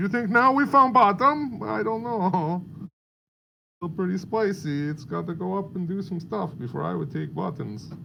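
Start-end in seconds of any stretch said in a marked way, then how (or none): 3.8-7.9 fake put-on European accent. Chatting with another speaker, putting on a fake european accent. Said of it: "That's my European accent".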